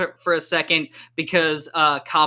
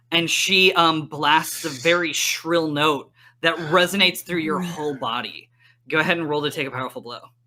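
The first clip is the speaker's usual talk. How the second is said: ordinary delivery, nothing marked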